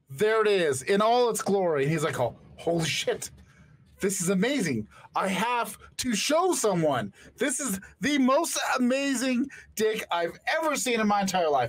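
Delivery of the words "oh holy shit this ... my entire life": put-on overjoyed, ecstatic, thrilled gushing outburst. Retelling how a man reacts to his surgery result: imitating an ecstatic man. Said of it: "He's ecstatic. He is just thrilled".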